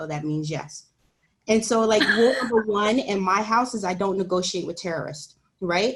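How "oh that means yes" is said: mock under-breath mutter, put-on muttered aside. A parent retells what her four-year-old said after hearing maybe, imitating an under-breath mutter. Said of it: "she said under her breath".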